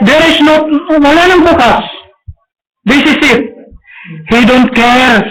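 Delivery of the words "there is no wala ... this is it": mock desperate shout, higher pitch. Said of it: "a shout like".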